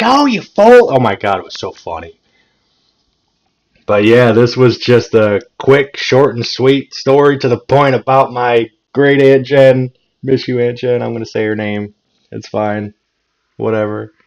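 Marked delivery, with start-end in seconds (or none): 0.0-0.9 put-on very high, loud old lady yell. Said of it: "Just hearing her yell".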